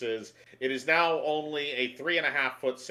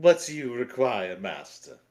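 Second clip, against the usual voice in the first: mock upper-class British accent; 3 dB louder than usual. Voicing a servant character asked to speak, posh British accent. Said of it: "posh British".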